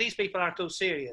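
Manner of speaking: ordinary talk, nothing marked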